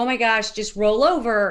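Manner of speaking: ordinary talk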